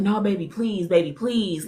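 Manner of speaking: mock desperate, loud, frantic pleading yell. Retelling a man begging her not to leave: imitating a man pleading. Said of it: "he gets in my face again and he's yelling".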